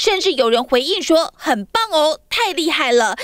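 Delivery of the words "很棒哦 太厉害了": usual speaking voice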